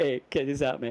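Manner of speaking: mellow, unbothered, outwardly chill laid-back dude voice. Imitating a friend showing something: imitating an outwardly chill voice. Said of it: "Outwardly chill".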